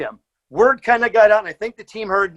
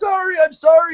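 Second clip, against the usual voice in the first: mock near-tears voice, much higher; 8 semitones higher, 3 dB louder than usual. Retelling how his buddy apologized to him, imitating someone about to cry. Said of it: "He's ready to cry".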